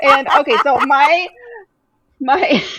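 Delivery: high, loud speech with giggling through the words. Starting to describe a book, laughing while talking. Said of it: "I can't stop laughing".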